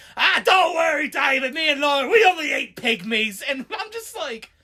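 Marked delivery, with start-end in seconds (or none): 0.2-3.4 slow put-on British accent. Retelling a man's reply to David, in a British accent. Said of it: "he has like the the British accent".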